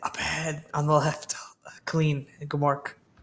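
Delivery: whispering. Leaning in close to someone's ear to point something out: whispering. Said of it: "I'm whispering where I think his ear is".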